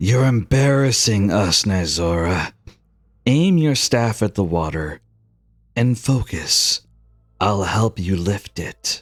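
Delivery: goddess-like voice, spoken in a whisper. Voicing a goddess who speaks into a player's ear: whispering goddess. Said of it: "whispers in your ear".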